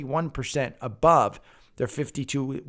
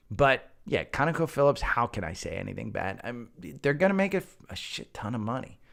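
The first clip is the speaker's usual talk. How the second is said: plain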